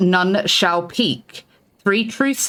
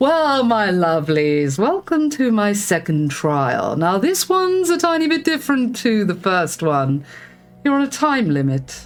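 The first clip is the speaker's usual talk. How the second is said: grand, otherworldly trial-master voice; 2 semitones higher than usual. Narrator voicing Ignarian welcoming the players to the second trial, booming Ignarian voice. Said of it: "Ignarian's voice booms in your heads".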